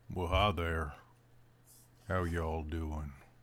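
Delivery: put-on old creature voice. Voicing the old Blink Dog greeting the party: Sam Elliott voice. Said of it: "I don't wanna make you do Sam Elliott".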